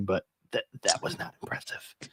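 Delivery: soft whisper close to the mic. Speaker comments on a team's win, whispering into the microphone so Mac can't hear. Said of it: "I'm just gonna whisper it into the micro- microphone".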